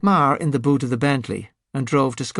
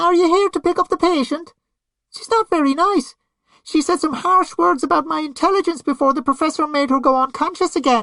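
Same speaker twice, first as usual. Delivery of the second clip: very high, bright, cheery voice, muffled as through mask. Narrating Clarabelle greeting visitors through a gas mask: Clarabelle's cheery, muffled voice. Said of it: "her cheery voice muffled".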